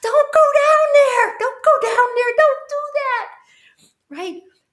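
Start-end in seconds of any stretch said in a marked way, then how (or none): 0.0-3.3 very high, shrill, very loud scream. Describing watching a horror show, mock-screaming a warning at the characters. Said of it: "and you're screaming".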